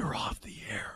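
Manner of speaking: put-on whispering. Speaker retells a man leaning over to a broadcasting friend, retelling a whisper. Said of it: "he leans over and whispers".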